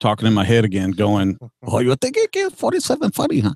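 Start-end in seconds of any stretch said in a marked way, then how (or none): 1.6-3.5 bad fake Russian accent, very high and swooping. Imagining a Soviet guy talking in his head, the speaker voices him: bad Russian accent. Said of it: "That was not a Russian accent".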